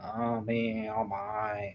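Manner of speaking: very slow, very soft, low cartoon dog drawl. Describing how a cartoon character talks, imitating a cartoon character. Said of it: "he kind of talk like this".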